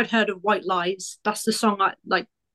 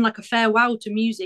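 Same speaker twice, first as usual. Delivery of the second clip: normal talking voice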